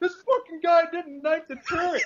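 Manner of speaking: mock, very high, shrill yelling. Retelling how a teammate in an Xbox game yelled to his friends, retelling a yell. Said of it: "he's like yelling at his friends".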